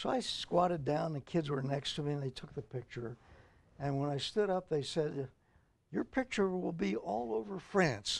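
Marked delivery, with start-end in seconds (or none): 5.9-8.2 put-on French accent, higher pitch. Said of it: "with an accent that I thought was French".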